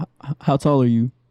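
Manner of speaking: deep, low-pitched voice. Role-playing a pickup conversation with a man, asking his height, deep voice. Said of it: "you got a deep ass voice, girl".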